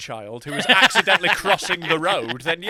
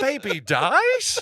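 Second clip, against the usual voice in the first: put-on rising, questioning intonation on "baby dies"; 8 semitones higher than usual. Coaching a partner on reading a news line, copying their delivery: mimicking a questioning tone. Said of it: "Why are you questioning it?".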